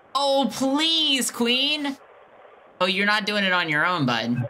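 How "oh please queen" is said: high, pleading, begging peasant voice. Told to speak like a peasant begging a queen for money, mock-begging like a peasant. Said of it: "You are begging for it".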